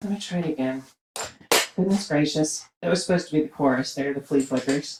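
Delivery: breathless, winded voice. Calling dance steps, stopping to try the routine again, out of breath. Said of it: "I am out of breath".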